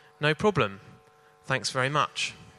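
normal talking voice

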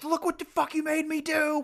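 put-on very high, drawn-out, slow furious outburst. Recalling a movie character's angry outburst: imitating an angry outburst. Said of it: "the whole, like, anger".

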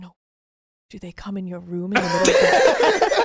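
put-on Eastern European accent. Retelling a woman pressing her about her male roommates, very Eastern European accent. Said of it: "very Eastern European".

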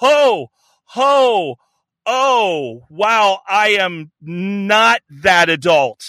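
very slow, acted, shocked and startled, oh stretched. Retelling a woman's reaction to hearing about the podcast: imitating a startled backpedal. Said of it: "she just stops in her tracks and just goes".

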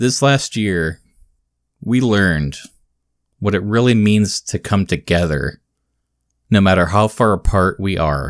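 dramatic, halting delivery with long pauses between phrases. Mimicking a man speaking to camera on a small stage, long dramatic pauses between phrases. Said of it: "there's a cadence where they're holding for applause".

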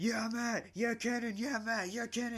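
mock, very high, shrill, loud screaming cheers. Speaker recalls teammates crowding the mat during a competition, imitating teammates screaming. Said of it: "so they're like screaming like".

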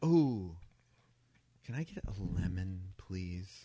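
slow, haughty, condescending, acted talking-down tone. Retelling a woman asking the server for a lemon, mock-condescending request. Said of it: "But she says it like that. Really condescending".

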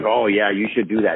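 ordinary talk

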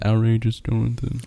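hushed, soft, barely projected quiet speech. Retelling how someone said a podcast intro: imitating Jonathan speaking quietly. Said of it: "he quietly said".

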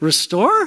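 skeptical, questioning intonation on the word restore. Showing the group how to say the word questioningly: doubtful questioning 'restore'. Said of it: "would you say it in a way that you question it? Like".

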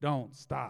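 odd, weird automated recorded announcement voice. Describing the airport exit chamber, imitating a weird automated voice. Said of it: "it's kind of a weird voice".

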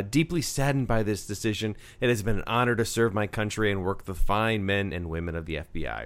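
ordinary talk

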